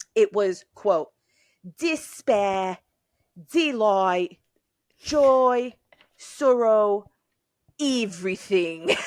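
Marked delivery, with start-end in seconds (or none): 1.8-8.9 very slow, attempted, not-great Australian accent. Quoting someone's words for the viewers: not-great Australian accent. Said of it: "I don't do a great Australian accent, but I'm here I go".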